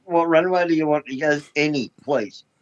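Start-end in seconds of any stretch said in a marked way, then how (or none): none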